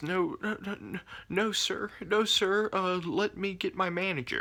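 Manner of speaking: mock very high, slow, scared, quavering, shaking voice. Retelling how an employee answered the speaker, imitating a shaking, scared voice. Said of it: "his voice is shaking".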